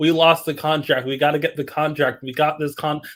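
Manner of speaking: ordinary talk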